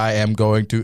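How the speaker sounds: robotic voice. Joking about hearing a chimpanzee's thoughts through an implant: robot voice. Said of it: "It's like the robot voice".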